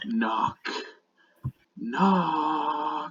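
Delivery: half-whisper like a thousand voices, "knock" drawn out. A game master voicing a being that speaks to the players, a half-whisper in a thousand voices. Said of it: "it whispers to you in a thousand voices".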